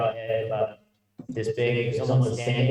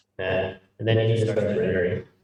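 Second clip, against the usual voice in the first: normal talking voice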